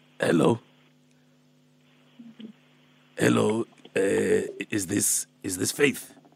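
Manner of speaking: put-on low, dropped old-man voice. Phoning Faith in a prank call as Alpheus: playing Alpheus, old man character. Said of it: "I'm Alpheus, I'm Alpheus".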